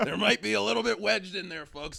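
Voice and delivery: rough, high put-on voice. Joking about catfish in a Trump impression. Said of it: "Your Trump doesn't really sound like Trump".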